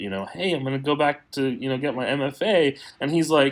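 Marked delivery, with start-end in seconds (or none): 0.3-2.8 excited, eager, announcing delivery. Retelling telling the grandparents about getting into grad school: imitating own past excitement. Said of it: "all excited".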